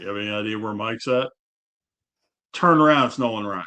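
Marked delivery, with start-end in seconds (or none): 0.0-1.3 put-on deep, quick voice with Texas accent. Speaker retells Nolan Ryan asking where Mike is, in a deep Texas voice. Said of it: "that deep Texas sound voice".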